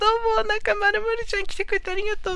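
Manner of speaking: very high, cute-acting cutesy voice. Showing the bit they often do of a streaming style: cutesy streamer impression. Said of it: "ブリッコ的な配信のモノマネ".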